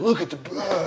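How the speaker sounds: put-on English accent. Retelling what Chad said on seeing the birds: imitating Chad's English accent. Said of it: "this English accent came out".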